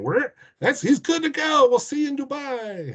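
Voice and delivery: put-on squeaky, very high voice with a Louisiana accent. Retelling what a jockey said after a race: squeaky Louisiana voice imitating Kent Desormeaux. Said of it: "in a squeaky Louisiana voice saying".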